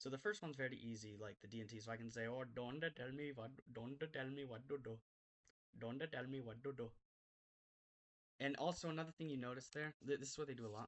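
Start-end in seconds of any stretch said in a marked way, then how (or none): 2.3-6.9 put-on Indian English accent. Demonstrating how Indian speakers say D and T sounds, Indian accent impression. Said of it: "another impression; when Indians are happy".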